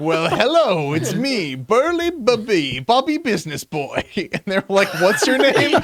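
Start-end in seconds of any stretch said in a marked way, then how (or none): 0.0-4.0 slow, swooping, big strong businessman character voice. Retelling showing up at James's front door as a new character, Bobby Business Boy. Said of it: "the big strong businessman".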